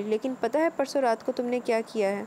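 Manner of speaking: ordinary delivery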